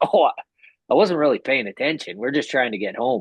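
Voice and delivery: mock light laughing through the words, friendly. Retelling a speeding driver's reply to a cop: imitating Dale chuckling.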